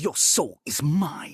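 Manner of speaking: slow voice, every word drawn out. Quoting a character's famous line about the way he speaks: Shang Tsung voice. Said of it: "when you do the voice".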